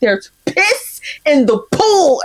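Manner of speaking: hard, emphatic acted tone. Retelling what Crockpot keeps saying to the speaker, imitating Crockpot saying it hard. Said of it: "And he's saying it so hard".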